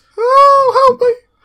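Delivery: shrill, piping, very high, very loud wailing cry. Voicing the man in the scene, in a high-pitched voice. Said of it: "it's going to be quite high pitched".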